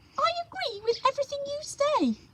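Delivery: tiny, very high, squeaky little voice. Narrator reads the Dormouse's reply to the Hatter: squeaky Dormouse voice. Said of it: "the Dormouse squeaked".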